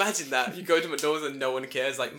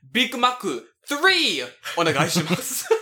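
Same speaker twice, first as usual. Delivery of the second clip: put-on cocky confident voice, higher and louder; 6 semitones higher, 7 dB louder than usual. Acting out a customer slamming a point card on the counter: imitating a confident customer ordering. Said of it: "slamming your fucking McDonald's point card".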